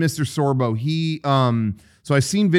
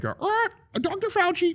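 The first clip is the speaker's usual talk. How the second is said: parrot voice, much higher and quieter; 6 dB quieter than usual. Retelling what a man said about a parrot-like sequel, parrot voice. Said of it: "like a parrot".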